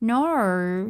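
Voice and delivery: overdone, drawn-out Australian "no". Showing how Americans think Australians say no: stereotyped Australian accent. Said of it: "I'm saying no the way Americans think Australians say no".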